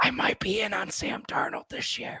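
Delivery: soft, breathy, barely voiced whisper. Having blocked himself out of view, the speaker slips in an aside, whispering. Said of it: "I'm going to whisper".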